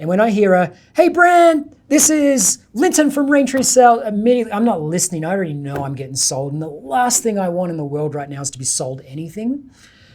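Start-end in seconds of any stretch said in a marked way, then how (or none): 0.9-4.0 very high, loud, super friendly telemarketer tone. Retelling a cold sales call opening: imitating a super friendly sales tone. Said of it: "that super friendly tone".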